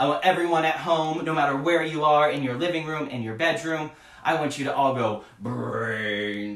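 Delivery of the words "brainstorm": put-on zombie voice. Speaker asks everyone at home to say the word, in a zombie voice. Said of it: "in our best zombie voice".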